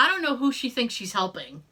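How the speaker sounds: usual speaking voice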